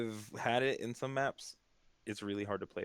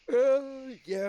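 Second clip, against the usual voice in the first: very high, loud words pushed out through a yawn; 8 dB louder than usual. Agreeing with another speaker's point while yawning. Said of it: "Sorry, I was yawning".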